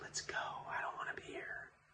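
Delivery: very quiet, hushed, breathy whisper under the breath. Retelling what the speaker whispered to a companion back then: retelling a whisper. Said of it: "I'm whispering this".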